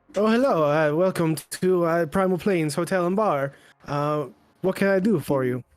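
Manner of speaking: put-on Italian accent. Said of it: "I have a terrible Italian accent".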